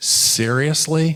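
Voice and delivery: high, utterly disgusted voice. Retelling the cab driver's reply to the hotel address: imitating a disgusted tone. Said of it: "Just in the most disgusted tone ever".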